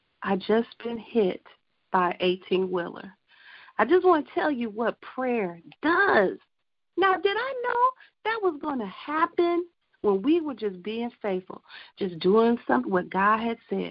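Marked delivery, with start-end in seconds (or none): none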